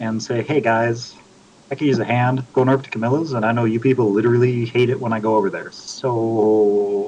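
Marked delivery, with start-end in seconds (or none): none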